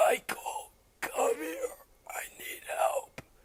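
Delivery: groaning in pain, breathy, near whisper. Reading a story aloud, a hidden figure calling Mike for help: groaning in pain. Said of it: "Still groaning in pain".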